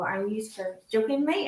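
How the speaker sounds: soft, private mutter under the breath. Retelling a past reaction to being put on the spot: imitating muttering under breath. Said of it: "under my breath, I would go".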